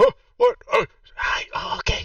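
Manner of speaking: rasping put-on voice. Game narrator voicing a character the players run past: raspy voice. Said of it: "I forget it's a raspy voice".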